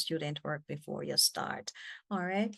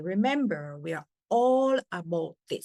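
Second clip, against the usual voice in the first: louder delivery with words pushed out emphatically. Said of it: "if you are giving emphasis".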